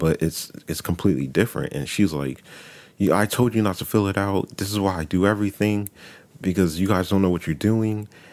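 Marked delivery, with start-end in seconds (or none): 3.0-8.1 acted-out, mock-loud raised voice. Telling of an argument over a form, quoting her; imitating someone getting loud. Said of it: "Why are you getting loud?".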